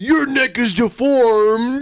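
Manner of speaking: imitated drunk voice. Retelling what a streamer said one night: imitating someone drunk. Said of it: "he was like".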